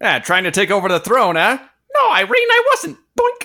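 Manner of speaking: cartoonish voice with swinging, swooping pitch. Trying to find a voice for a bit, landing on a Luigi voice. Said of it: "That was Luigi".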